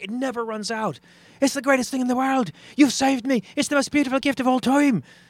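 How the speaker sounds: put-on very high-pitched, very loud Irish accent. Telling a joke about a genie, speaking as the man granted a wish, Irish accent. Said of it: "I'm impressed by the Irish accent".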